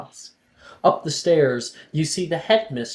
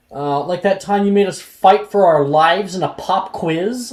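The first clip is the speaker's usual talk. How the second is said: sneering, smart-aleck, snide, raised and higher voice; 5 semitones higher, 6 dB louder than usual. Voicing a student in class answering the professor: snide. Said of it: "Levi says snidely".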